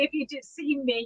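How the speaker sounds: ordinary talk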